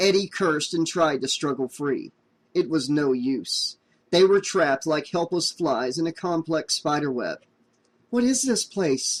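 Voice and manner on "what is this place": trembling, shaky, high-pitched whisper. Reading a story aloud, a trapped character asking where they are: shaky whisper. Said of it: "Christine whispered shakily".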